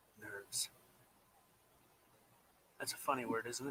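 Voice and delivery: almost whispering. Speaking to someone who says they can't hear, in a near whisper. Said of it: "You're like whispering".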